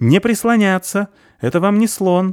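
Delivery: very high-pitched squealing cry. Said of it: "верещит сверху фаль".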